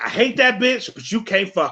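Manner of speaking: mocking, bitter, resentful griping voice. Imitating a bitter baby daddy: imitating a bitter baby daddy. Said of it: "A bitter ass baby daddy".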